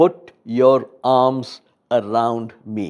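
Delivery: slow, very assertive, forceful delivery. Retelling a wife's demand from her hospital bed: imitating an assertive tone. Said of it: "In a very assertive tone".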